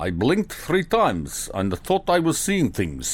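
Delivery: bad, terrible, put-on Russian accent. Quoting a doctor's words aloud in a terrible Russian accent. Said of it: "you do a terrible Russian accent".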